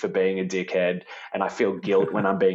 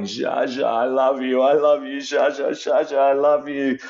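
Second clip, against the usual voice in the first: tearful, sobbing, high-pitched crying voice; 6 semitones higher, 4 dB louder than usual. Retelling a memory of crying for a late grandfather: retelling own crying. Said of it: "I just remember crying".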